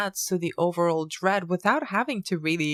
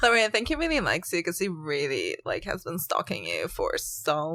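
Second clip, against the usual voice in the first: put-on annoying teenage Valley Girl voice, swooping pitch. Two hosts doing a bit in teenage-girl voices: annoying valley girl voice. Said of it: "in our annoying Valley Girl".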